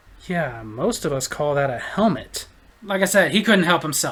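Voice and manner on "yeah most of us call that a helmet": lower, quieter muttered aside. Retelling a remark Ken made to a stranger: imitating Ken muttering under his breath. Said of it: "under his breath".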